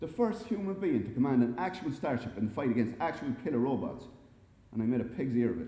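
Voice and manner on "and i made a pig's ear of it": ordinary delivery, nothing marked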